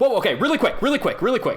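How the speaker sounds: high-pitched, rushed, hurried delivery.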